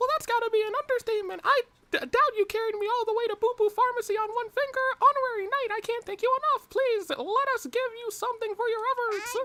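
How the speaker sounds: goofy, dumb, very high-pitched silly character voice. Voicing a character who thanks the honorary knight: dumb high voice. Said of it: "I gave him the dumb high voice".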